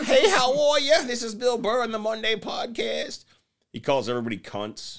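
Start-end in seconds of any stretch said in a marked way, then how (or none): 0.0-3.2 very high-pitched, grating voice. Imitating a podcaster who talks in an irritating way: Bill Burr voice. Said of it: "he talks like this".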